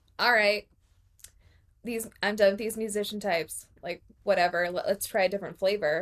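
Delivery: plain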